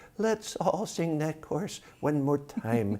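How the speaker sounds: very high, wavering, quivery little voice. Retelling the end of a small concert he led from the piano: retelling in a quivery little voice. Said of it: "in my quivery little voice".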